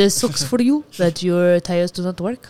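put-on French accent with a slight Italian tinge. Discussing a tire dispute, the speaker voices a team's response in a mock French accent. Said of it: "I don't know why I'm in a French accent".

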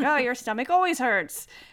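ordinary delivery

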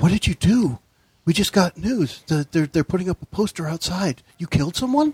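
secretive, confiding tone. Game master voicing a half-elf server talking mainly to Brenton, hushed voice. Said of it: "she's speaking in a hushed voice".

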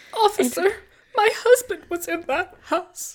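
very high, fake sobbing, pleading tone. Recounting Amber waiting in the driveway for the bomb, doing Amber's fake crying. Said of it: "her fake crying".

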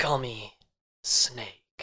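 put-on whispery outlaw voice. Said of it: "he has to talk like this".

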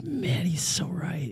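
slow, laughing whisper.

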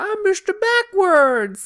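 squeaky, very high, loud put-on character voice. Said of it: "that's my Adam Sandler voice".

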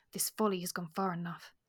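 ordinary delivery, nothing marked

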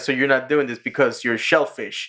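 normal talking voice

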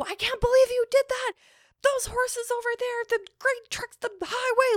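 very high, furious, losing-her-mind rant. Retelling what she said when she was so mad, imitating a furious rant. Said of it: "she is losing her fucking mind".

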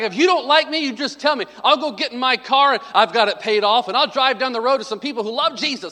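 mock berating rant, high-pitched. Retelling how a man ripped into the sound booth guys, imitating him berating them. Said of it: "And he starts ripping the sound booth guys".

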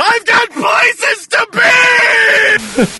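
put-on shrill, very high, very slow, drawn-out scream. Describing a video of a man in his car, acting out him: retelling a scream. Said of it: "he's like screaming in his car".

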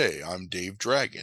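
calm, moderated, low baritone voice. Retelling a movie, imitating its lead actor: calm, low baritone Hulk Hogan voice. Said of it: "talks in a very calm, moderated, like, low baritone".

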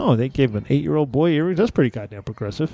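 plain

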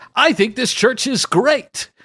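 very high, loud, booming put-on radio announcer voice. Showing how the remark should be said, in a radio announcer voice. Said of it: "in a radio announcer voice".

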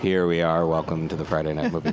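deep, buttery, smooth voice. A podcast co-host showing how he opens each episode, in deep, buttery tones. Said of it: "The deep, buttery tones to kick off the podcast".

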